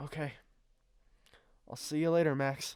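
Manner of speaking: anxious, shaky voice. She says goodbye to Max before jogging back in the rain, nervous and shaky. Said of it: "She's shaky and But I was she's too nervous. / She's nervous. / And she takes a step away, / nervous".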